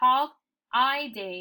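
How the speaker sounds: holiday said slowly, carefully, and stretched out. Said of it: "Listen carefully".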